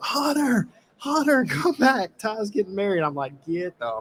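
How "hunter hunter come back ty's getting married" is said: shrill, very high-pitched crowd hollering and screaming. Retelling a moment on the beach, imitating everybody screaming his name. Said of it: "everybody starts screaming".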